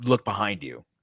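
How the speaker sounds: usual speaking voice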